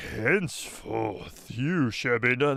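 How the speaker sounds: put-on low deep voice. Imitating a recorded line, trying for a low, deep voice. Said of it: "that's deep".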